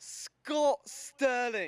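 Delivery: put-on British accent. Asked for their best british accent, the speaker answers in a british accent. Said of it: "Can you give me your best British accent?".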